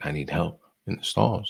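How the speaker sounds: urgent, hushed, barely voiced whisper. Retelling what a pale kid said when he walked in: imitating a whisper. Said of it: "he just whispered".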